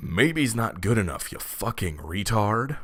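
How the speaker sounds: imitated angry old man voice. Retelling what an old man said to the speaker: imitating an angry old man. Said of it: "looks me dead in the eye and says angrily".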